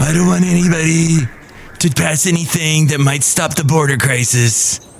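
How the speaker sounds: politician voice drifting into a pirate voice. Breaking off from travel talk to do a Trump impression that sounds like a pirate. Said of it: "this is my best Trump impression ever".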